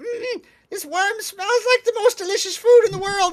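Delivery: shrill, very high, loud goblin squeal. Voicing a goblin praising the smell of a roasting worm: goblin voice. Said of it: "this goblin starts saying".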